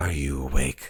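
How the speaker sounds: hushed whisper. A figure at the door's portal asks the listener, whispering. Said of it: "this sort of whisper says".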